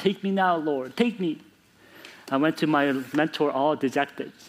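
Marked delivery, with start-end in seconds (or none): 0.0-1.4 mock desperate cry, higher. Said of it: "in crying".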